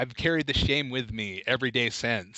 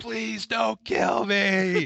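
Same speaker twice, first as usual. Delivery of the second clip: mock terrified, high, desperate scream at full lungs; 8 semitones higher, 3 dB louder than usual. Recounting a friend following them to scare them, retelling a yell as loud as possible. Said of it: "But I yelled as loud as I could".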